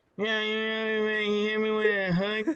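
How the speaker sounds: mocking, slurred fighter voice. Imitating a fighter answering a post-fight interview question: imitating Nate Diaz slurred speech.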